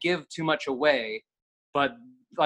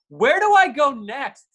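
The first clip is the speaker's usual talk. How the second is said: put-on very high, loud, shrill, drawn-out carrying call; 11 semitones higher, 6 dB louder than usual. Speaker retelling a character walking downstairs talking out loud, imitating her loud voice. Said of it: "she goes out loud".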